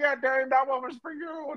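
small croaky frog-like voice. Acting out what Pat Mahomes will say to Darian: little Kermit the Frog voice. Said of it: "he got that little Kermit the Frog voice".

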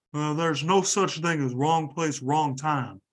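horrible, bullfrog-ish put-on voice. Quoting a football coach after a player's arrest: horrible Nick Saban impression. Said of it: "that was a horrible impression".

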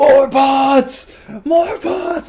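very loud, very high, slow, drawn-out screaming. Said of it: "just screaming at it".

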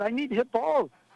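high, loud, freaked-out pleading tone. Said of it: "I'm, like, freaking out".

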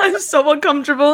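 nervous laughter breaking up the words. Talking about mirrors that unsettle, laughing while talking. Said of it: "I'm laughing because I'm so upset".

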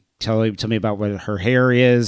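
ordinary talk

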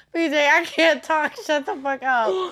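words broken up by laughing. Telling another person to stop, laughing while talking. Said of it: "I'm going to go into a laughing fit".

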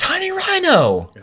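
shrill, high, loud, eager excited scream. Speaker retells a woman answering a would-you-rather question, retelling an excited scream. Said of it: "she just screams out".

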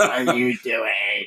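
put-on impression of a woman's voice. Retelling a moment with a woman, the speaker repeats her words, imitating her voice. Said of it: "Great reenactment".

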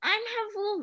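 put-on very high, squeaky, quirky little kid voice. Relating a line from a video game, doing a quirky little kid voice. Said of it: "supposed to be like a little kid".

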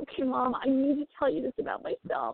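acted-out crying, high-pitched, tearful and upset. Retelling what a boy said to his mom, imitating a boy crying. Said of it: "he's crying".

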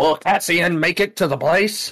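put-on old-time voiceover announcer. Imagining a fifties show ending on a cliffhanger: old-time TV voiceover announcer. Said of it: "a voiceover guy at the end going".

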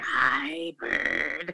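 low, rough, gravelly creature voice. Speaker imitates how her father always voiced Snuffleupagus's line, gravelly Snuffleupagus voice. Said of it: "he had this kind of like gravelly voice".

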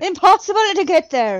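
loud, poor fake Irish accent. Two people attempting accents, one tries in a bad Irish accent. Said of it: "It's bad, isn't it?".

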